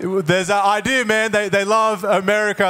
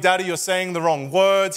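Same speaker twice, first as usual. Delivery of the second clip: plain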